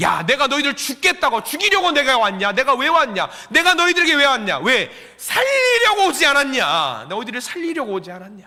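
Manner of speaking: rebuking tone. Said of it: "꾸짖으시는 거예요".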